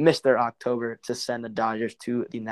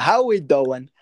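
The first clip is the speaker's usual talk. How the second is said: loud, punchy, put-on New York accent; 3 semitones higher, 7 dB louder than usual. Podcast host greeting his co-host and listeners, in his fake New York accent. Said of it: "my New York accent".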